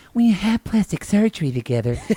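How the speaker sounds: effusive, doting tone.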